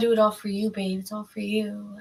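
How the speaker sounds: put-on sweet, lovey-dovey, affectionate baby talk voice. Reading tarot cards, voicing a person who wants forgiveness: imitating baby talk. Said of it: "baby talk in my ear".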